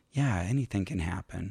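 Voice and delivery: half-whispered aside. Retelling what the woman helping her onstage said: imitating a half-whisper. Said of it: "just kinda whispers, like".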